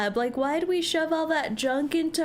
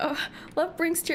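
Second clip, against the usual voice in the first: mock crying, faster; 3 semitones higher than usual. Speaker tells the guys they think they're in love, mock crying. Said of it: "why am I crying?".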